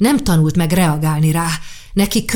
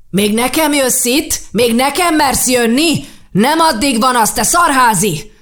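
enraged, high, furious shouting; 7 semitones higher than usual. An embittered father confronts Kár: shouting at him. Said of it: "aki nem pusztán Kárt üvöltötte le".

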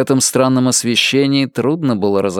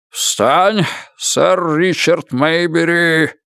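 pitched up, proclaiming loudly; 5 semitones higher than usual. The Earl touches Richard's shoulders with a knife and addresses him, roaring. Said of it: "проревел он".

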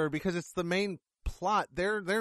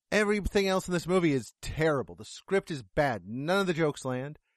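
plain

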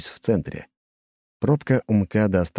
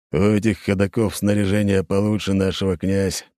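plain

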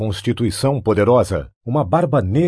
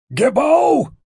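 very shrill, very high, frantic shout. Públio, crouched against a wall, calls for his slave with a frantic shout. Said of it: "gritou Públio freneticamente agachado contra a parede".

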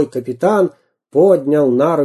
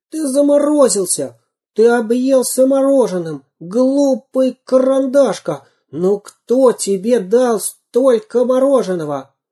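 very high, desperate shout; 10 semitones higher than usual. Samodelkin keeps addressing the pencil, shouting desperately. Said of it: "отчаянно закричал Самоделкин".

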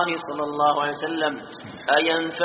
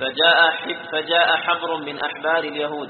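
ordinary delivery

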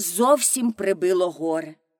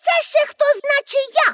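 very high, shrill shout; 14 semitones higher than usual. Narrator reads a character confronting an attacker on stage, shouting. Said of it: "крикнула Пепі".

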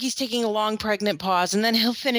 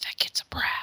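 mock muttering under breath, quieter. Parent retells strangers in a store line judging their kids, imitating a mutter under breath. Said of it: "you hear them mutter under their breath".

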